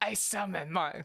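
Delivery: put-on arrogant voice. Doing a timed impression of a named character: Chaz Princeton voice. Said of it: "do what he sounds like in my head".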